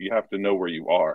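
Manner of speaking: put-on whispering. Retelling what a man at the game said: imitating someone whispering. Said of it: "the guy whispered into my ear".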